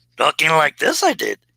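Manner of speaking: put-on, very high voice of a little sage creature. Recalling an earlier impression for a viewer: Yoda impression. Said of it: "my Yoda impression".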